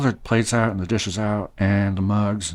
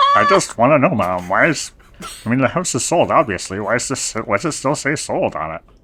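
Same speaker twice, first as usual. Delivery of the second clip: put-on elderly man voice; 2 semitones higher than usual. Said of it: "you have such an old man voice for a young boy".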